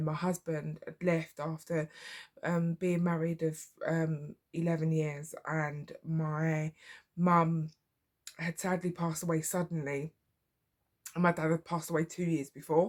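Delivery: emotional, pained delivery with rising feeling. Recounting what she told the doctors about her past, getting emotional. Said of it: "I'm getting emotional".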